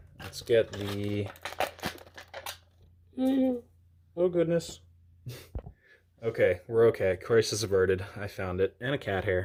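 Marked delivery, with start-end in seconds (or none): 3.2-4.8 high, slow, startled gasp of fear. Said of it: "hear the fear in my voice".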